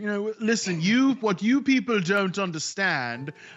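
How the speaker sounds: put-on, slow, haughty, superior, snooty voice. Asked how they talk, getting a little snooty with it: put-on snooty voice. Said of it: "you've got to get a little snooty with it".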